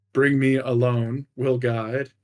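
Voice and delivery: halting broken Common. Narrating a scene, voicing a figure who switches from Draconic to Common: broken Common speech. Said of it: "and then in broken common again".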